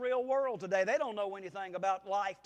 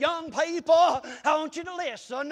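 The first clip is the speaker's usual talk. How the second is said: loud, drawn-out pulpit preacher voice; 6 semitones higher, 8 dB louder than usual. Recalling a bible college professor speaking at chapel, imitating his preaching voice. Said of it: "he used to preach like this".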